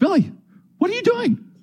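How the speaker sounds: acted, slightly panicked, very high, rising alarmed call. Retelling a dad finding his child stopped in the slide: imitating a panicked dad. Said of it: "my dad is just panicked a little bit".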